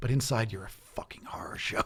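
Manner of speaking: unvoiced, soft, quiet whisper.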